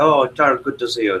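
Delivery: put-on thick Indian accent, warm tone. Like a kindly professor walking among a crowd of students, greeting each one warmly in a thick indian accent. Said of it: "had this really thick Indian accent".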